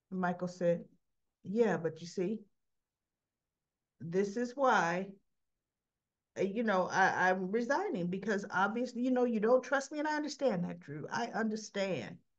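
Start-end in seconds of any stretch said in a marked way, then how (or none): none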